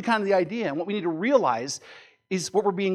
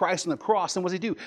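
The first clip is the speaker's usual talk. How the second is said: usual speaking voice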